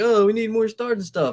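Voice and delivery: put-on eager pleading, loud and high-pitched. Retelling what wrestling fans keep saying: imitating begging fans.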